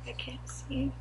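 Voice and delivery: soft, unvoiced whisper. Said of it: "Shh, I gotta whisper".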